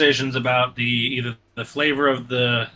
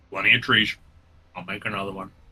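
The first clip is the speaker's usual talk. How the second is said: put-on low, old bearded man character voice; 4 semitones lower, 3 dB quieter than usual. Voicing an old man with missing teeth who offers another bowl: old bearded man voice.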